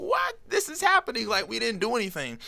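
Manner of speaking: disbelieving, excited squeal, very high pitch.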